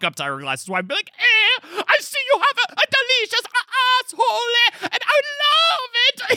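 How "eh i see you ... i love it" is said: very high, slow, ridiculous Italian chef caricature. Describing walking up dressed as a chef: ridiculous Italian chef caricature. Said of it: "a ridiculous caricature of an Italian chef".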